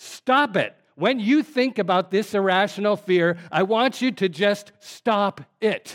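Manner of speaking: shouting.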